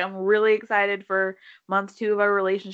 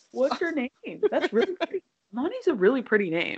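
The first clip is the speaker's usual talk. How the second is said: put-on swooping, animated, sing-song voice; 4 semitones higher than usual.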